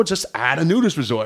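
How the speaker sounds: ordinary delivery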